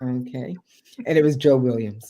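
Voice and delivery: ordinary talk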